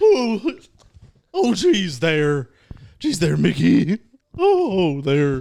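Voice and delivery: high, swooping, sing-song cartoon dog voice, bellowed. Asked how the character sounds, greeting Mickey in a Goofy voice. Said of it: "You gotta try it".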